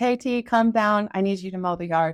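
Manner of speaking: ordinary delivery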